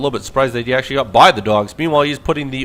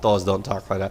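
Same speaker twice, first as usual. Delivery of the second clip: ordinary talk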